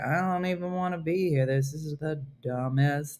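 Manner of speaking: put-on low, sullen, bored teenage-girl voice. Imitating a teenage girl recording a Duolingo voice: imitating a bored teenage girl. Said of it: "they just had a teenage girl".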